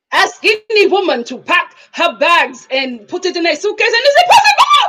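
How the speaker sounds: put-on French accent, high with swooping pitch. Retelling what a woman said to the speaker, imitating her french accent. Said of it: "her French accent to me".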